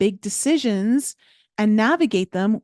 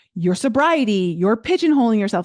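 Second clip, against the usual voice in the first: mock raised, shouting voice. Recounting what a man said in an argument, repeat his words, retelling a raised voice. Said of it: "he raises his voice and he's starting".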